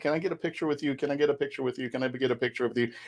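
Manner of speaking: play-acted pleading tone, repeated over and over. Retelling asking cosplayers for photos when starting out: imitating begging. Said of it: "begging cosplayers".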